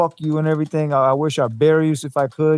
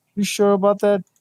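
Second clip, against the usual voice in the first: pitched-up, passive-aggressive, doubting tone; 5 semitones higher than usual. Imitating how Errol would answer an insult: imitating Errol passive-aggressively.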